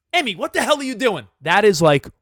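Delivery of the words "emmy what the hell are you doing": mildly raised, slightly higher scolding tone. Parent showing how they'd speak to Emmy, acting out a slightly raised voice. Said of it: "when I raise my voice a little bit".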